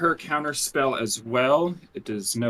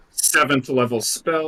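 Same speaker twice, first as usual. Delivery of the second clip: ordinary talk, nothing marked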